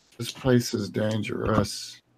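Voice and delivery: worn-out, beaten-down, exhausted breathy whisper. Voicing a badly hurt character slumping against a wall: exhausted, beat-up voice. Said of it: "he says it in an exhausted, beat the fuck up kind of way".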